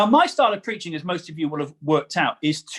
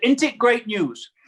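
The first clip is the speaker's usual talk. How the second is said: put-on higher, Huddersfield-style northern English accent; 6 semitones higher than usual. Retelling what a man said to you, in a Huddersfield accent. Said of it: "That is a fantastic Huddersfield accent".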